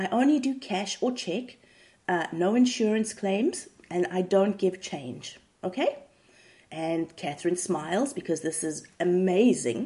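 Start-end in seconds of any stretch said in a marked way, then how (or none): none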